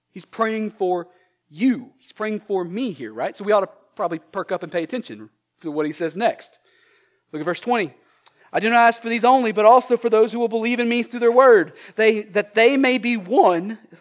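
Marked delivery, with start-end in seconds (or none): 12.0-13.8 breaking voice, cracking mid-phrase. Reading verse 20 aloud to listeners, voice cracking. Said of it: "My voice just cracked".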